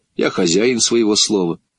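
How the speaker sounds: ordinary delivery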